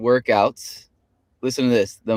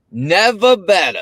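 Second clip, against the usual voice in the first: put-on local Boston-style accent, pitched up; 8 semitones higher, 4 dB louder than usual. Retelling what John answers every time they greet him, in John's Boston accent. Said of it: "in his his Boston accent".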